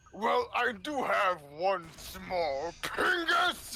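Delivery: slow, drawn-out, sing-song voice with swinging pitch. Retelling a cartoon video scene, quoting Robotnik: imitating Robotnik. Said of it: "Robotnik is like".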